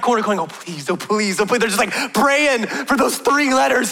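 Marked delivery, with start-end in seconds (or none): 0.4-1.6 put-on childlike whispering voice. Retelling kids pleading right around the corner: imitating kids whispering.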